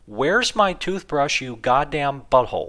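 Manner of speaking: shrill, loud mock screaming. Retelling a phone call where a wife screams at her husband: imitating someone screaming. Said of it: "his wife is screaming at him".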